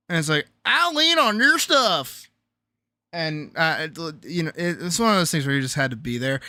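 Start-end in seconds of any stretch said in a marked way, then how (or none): 0.6-2.3 pitched-up, stretched-out, drawn-out cartoon voice. Retelling a made-up joke character to cheer up a brother: Tow Mater impression. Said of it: "it was like a Tow Mater impression".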